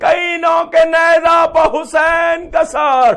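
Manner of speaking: cry full of anguish.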